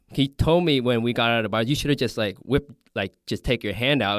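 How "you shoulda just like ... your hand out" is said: ordinary talk, nothing marked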